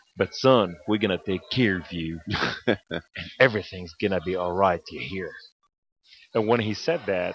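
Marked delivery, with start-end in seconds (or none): 0.2-5.3 put-on folksy American Southern accent. Retelling what an orthopedic surgeon said: imitating a Southern accent.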